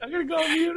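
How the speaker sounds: very high giggling, words breaking up. Reacting to a joke proposal, laughing while talking. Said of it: "I can't stop laughing".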